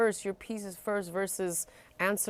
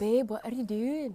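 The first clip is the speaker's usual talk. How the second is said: imitated British, Irish or Scottish accent; 3 semitones higher than usual. Imitating how people they follow on Instagram talk, in a British Isles accent. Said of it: "and they really talk like this".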